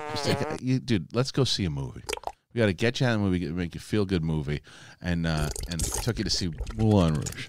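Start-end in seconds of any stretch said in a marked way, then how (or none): none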